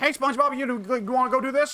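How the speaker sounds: fast, high-pitched dumb voice. Showing how a dumb character sounds in the Japanese dub: Japanese-dub Patrick voice, high-pitched and rapid. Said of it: "Patrick got turned into".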